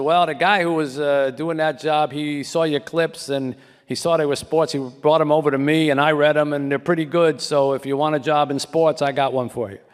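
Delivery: put-on broad Boston accent, laid on thick. Retelling a long-distance phone call from a sports editor: imitating Fred Turner's Boston accent. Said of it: "a thick Boston accent".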